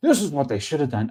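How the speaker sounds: know-it-all tone. Retelling what a jackass sitting at home says, mocking a know-it-all. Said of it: "some jackass sitting at home is like".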